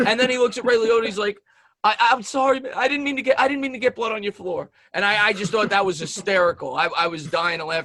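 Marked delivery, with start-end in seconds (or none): 1.8-4.7 acted, high, near-tears, stumbling, sorry-sounding voice. Retelling a film scene after a stabbing: imitating Pesci, almost crying. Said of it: "He looks as if he's almost gonna cry".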